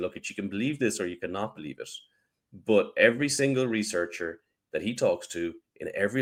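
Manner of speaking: plain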